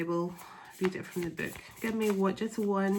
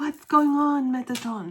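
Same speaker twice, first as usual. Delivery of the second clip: put-on Persian accent, higher and louder; 5 semitones higher, 7 dB louder than usual. Repeating a question the way her partner speaks: persian accent. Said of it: "I actually sound like my person".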